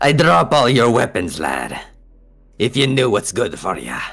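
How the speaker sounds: swooping, high-pitched, swashbuckling pirate voice. Voicing a pirate who points a saber at the players: piratey character voice. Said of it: "piratey looking dude".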